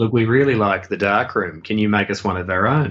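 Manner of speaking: ordinary delivery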